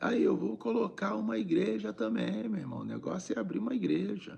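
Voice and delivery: high, fast, mocking jeer.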